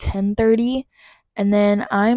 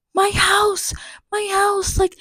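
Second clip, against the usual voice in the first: acted, desperate, very high, very slow, stretched panicked yell; 12 semitones higher than usual. Recounting what the grandma yelled during the commotion, retelling grandma's yell. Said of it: "my grandma yell in Spanish".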